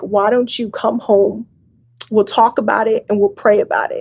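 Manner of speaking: ordinary talk, nothing marked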